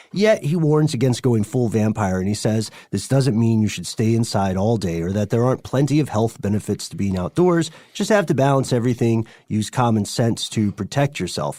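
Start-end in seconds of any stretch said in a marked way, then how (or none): none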